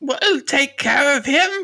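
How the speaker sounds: squeaky, very high-pitched goblin creature voice. Narrating a centaur scooping up Jamie, speaking as the centaur in a goblin centaur voice. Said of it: "I've got to remember my goblin centaur voice".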